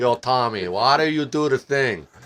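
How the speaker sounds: comic, put-on Italian accent. Demonstrating a voiceover idea for him: italian accent. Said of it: "a real Italian accent".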